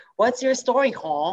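high-pitched put-on Singaporean English accent. Trying out a name, the speaker says it in a Singaporean accent. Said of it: "Singaporean style".

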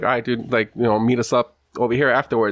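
ordinary talk

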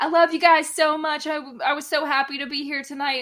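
high-pitched loud shouting. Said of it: "yelling at them".

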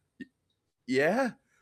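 high, frightened, halting stammering voice. Retelling answering a call after hearing a strange voice: imitating a fearful reply. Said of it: "in real big fear for a second".

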